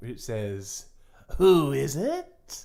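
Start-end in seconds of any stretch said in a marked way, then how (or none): 1.4-2.7 eerie, creepy put-on voice. Telling a story, a voice behind a door speaks: creepy put-on voice. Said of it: "you hear a creepy voice that you heard before".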